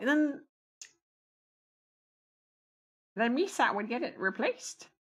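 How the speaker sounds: goofy, high, bouncy sing-song alien voice. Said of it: "I sound like um freaking uh, Jar Jar".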